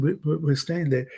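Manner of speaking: ordinary delivery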